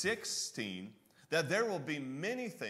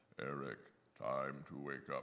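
badly done movie-star voice, very low and soft; 12 semitones lower, 7 dB quieter than usual. Acting out God speaking from heaven to wake Eric, in a terrible John Wayne voice. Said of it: "I need to put my John Wayne voice on".

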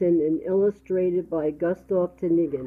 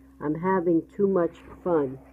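ordinary delivery, nothing marked

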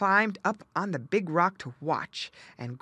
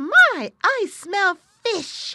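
gleeful, shrill, booming, excited, very slow, drawn out; 13 semitones higher, 10 dB louder than usual. Narrating a story as the otter smells fish, excited Little Joe Otter cry. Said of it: "[name] had been more full of fun than ever".

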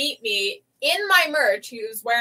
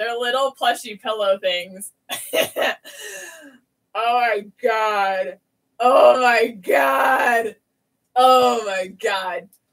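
laughing so hard it turns to crying; 4 dB louder than usual. A cosplayer reacting to new plushy props, crying laughing. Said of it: "I'm crying laughing right now".

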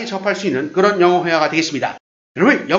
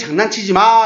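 usual speaking voice

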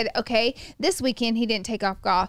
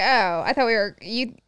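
normal talking voice

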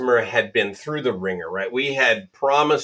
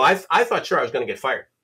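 ordinary talk, nothing marked

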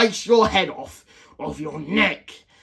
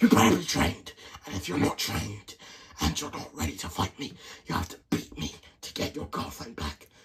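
deep, hushed, whispery villain voice; 8 semitones lower, 9 dB quieter than usual. In a role-play, speaking as the one holding the girlfriend, deep voice. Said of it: "I'll just go back to my deep voice then".

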